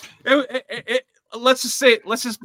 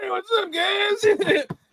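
mock drunken, high-pitched, slow, drawn-out voice; 11 semitones higher than usual. Retelling boarding the morning train to the game still drunk: imitating a drunk greeting. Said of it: "and I was still drunk".

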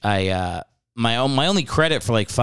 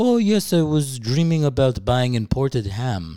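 put-on heavy, thick, full-on French accent. Retelling what his grandpa said on waking up, in a thick French accent. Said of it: "he speaks in a full, thick French accent".

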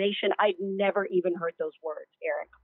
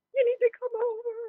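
acted crying voice, very high and tearful. Retelling a phone call to the boyfriend at the time, imitating own past crying. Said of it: "I was crying on the phone and I was like".

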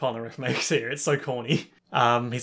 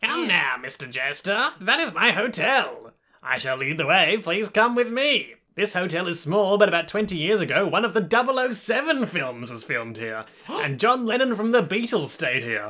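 put-on high-pitched elderly professor character voice; 6 semitones higher than usual. Asked which voice they were doing, the speaker performs it: Old Professor Frank voice. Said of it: "Old Professor Frank".

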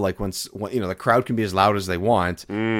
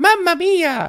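very high, loud put-on kid voice; 5 dB louder than usual. Speaker shares a favorite sound they found, doing it in a Baby Mario voice. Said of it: "In like a really like kid high-pitched voice".

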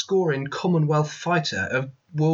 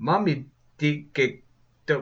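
bad put-on South African accent, every vowel an i. Trying out accents, one speaker attempts a bad South African accent. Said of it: "replace every vowel with an I sound".

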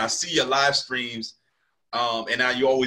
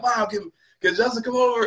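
mock yell, much higher; 10 semitones higher than usual. Reminding the listener how they yelled to their mom, imitating someone yelling. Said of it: "I remember you yelling at your mom like".

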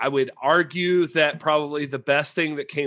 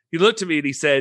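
usual speaking voice

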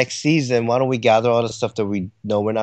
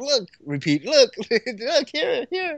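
very high, giddy and eager.

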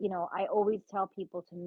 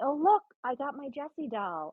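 acted thrilled little girl showing off, high, swooping; 7 semitones higher than usual. Parent retells the child coming home with a new doll, imitating an excited child. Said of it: "she was like all excited".

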